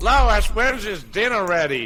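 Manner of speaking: high, cartoonish character voice. Playing a Family Guy scene, calling to Lois: Peter Griffin voice. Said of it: "playing all the characters".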